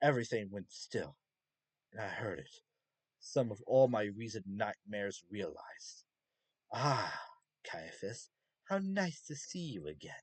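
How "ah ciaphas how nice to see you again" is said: seductive, welcoming, sing-song demon voice. Reading a story, the demon princess calls out to ciaphas: seductive demon princess voice. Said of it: "The manifested demon princess giggled and held to her mouth like she'd just been told some juicy piece of gossip at a / out of formation and paralyzed as the ball of melted flesh finally coalesced int".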